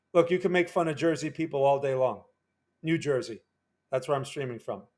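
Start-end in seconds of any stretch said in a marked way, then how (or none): none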